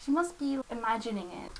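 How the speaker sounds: ordinary delivery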